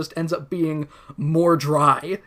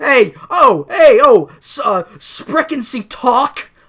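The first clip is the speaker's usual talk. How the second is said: very loud, high, slow, drawn-out yelling; 9 semitones higher, 9 dB louder than usual. Retelling how Ellis stands up and starts yelling: imitating Ellis yelling. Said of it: "just starts yelling at".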